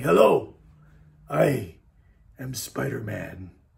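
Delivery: deep, creaky, soft and rasping wise-mentor voice. A speaker imitates their two-year-old son greeting people, sounding like Mr. Miyagi. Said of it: "He kind of sounded like Mr. Miyagi".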